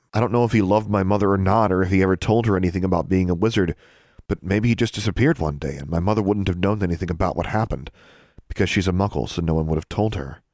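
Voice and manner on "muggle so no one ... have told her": plain reading voice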